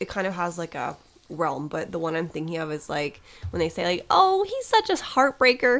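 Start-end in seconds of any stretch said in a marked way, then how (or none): 4.1-5.8 very high, loud put-on old lady voice. Quoting something people say, in an old lady voice. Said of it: "Again with the old lady voice".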